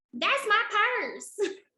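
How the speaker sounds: put-on country accent, very high, country-girl voice. Quoting a girl from an old episode, in her country voice. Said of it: "the girl just sounded so country".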